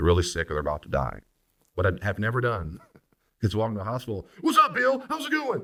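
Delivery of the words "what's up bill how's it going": very high-pitched fake yelling. A pastor shows how not to greet someone at a hospital bedside, fake yelling. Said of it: "I start yelling, screaming".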